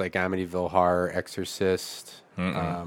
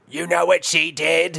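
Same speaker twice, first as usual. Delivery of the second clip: mock layered demonic voice, higher and louder; 10 semitones higher, 6 dB louder than usual. Quoting a scary film scene, imitating multi-track possessed voice. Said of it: "the multi-track voices of".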